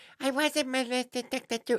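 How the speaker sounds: put-on very high, tiny little baby talk. Retelling a radio caller's reply to the doctor: imitating a little baby voice. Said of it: "some girl using a little baby voice".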